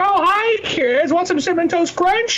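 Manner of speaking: put-on very high, kindly grandfatherly old man voice. Describing old men who came in, imitating a kindly old man for Cinnamon Toast Crunch. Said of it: "a kindly old man for Cinnamon Toast Crunch".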